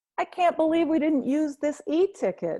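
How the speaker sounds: mock, falsely bright, very high voice. Sitting with brother and dad on camera, holding a drawer of mementos: bright, fake voice. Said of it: "I say in a bright, fake voice".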